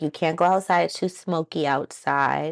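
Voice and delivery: ordinary talk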